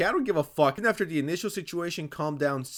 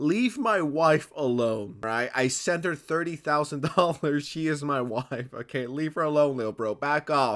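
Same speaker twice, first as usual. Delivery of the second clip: normal talking voice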